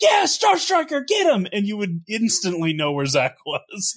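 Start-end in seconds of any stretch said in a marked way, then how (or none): 0.0-1.5 put-on very high-pitched little-kid yelling. Retelling how a kid in the match called out: imitating a kid yelling. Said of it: "the kid would just yell".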